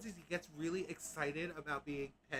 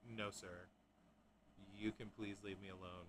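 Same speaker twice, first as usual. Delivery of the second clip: put-on cat voice, older, lower and quieter; 8 semitones lower, 9 dB quieter than usual. Retelling how the older cat hisses at the playful kitten: voicing Arya the cat refusing to play. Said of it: "hisses at him and is like".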